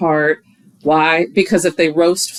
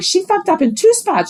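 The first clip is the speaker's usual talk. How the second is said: mocking yippy voice, higher pitched; 12 semitones higher than usual. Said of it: "Amber's yippy ass comes over and is like".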